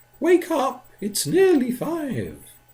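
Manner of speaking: tiny voice, very high and swooping. Reading a poem aloud, the woman by the fire speaks in a tiny voice. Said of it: "she said in a tiny voice".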